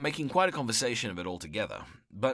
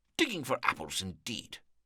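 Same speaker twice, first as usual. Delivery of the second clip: cross, irritated, angry voice. Reading a story aloud, voicing the rabbit answering a stranger: angry. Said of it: "said the rabbit angrily".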